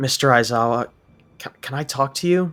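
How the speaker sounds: hesitant, bashful, sheepish, stumbling delivery. Narrator reads a student's line to his teacher, sheepish. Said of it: "the boy asked sheep- sheepishly".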